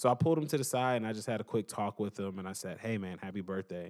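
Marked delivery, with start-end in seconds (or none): 2.8-3.9 mock whisper, quieter. Retelling a quick birthday talk pulled aside with the kid: imitating own whisper. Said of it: "I was whispering to him".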